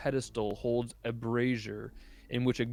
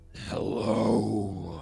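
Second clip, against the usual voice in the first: loud, rough, thick, gurgling, burbling drawl; 3 semitones lower, 5 dB louder than usual. Game master voices a beholder speaking inside the players' heads: thick, burbling voice. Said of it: "you hear in a thick, burbling voice inside your head".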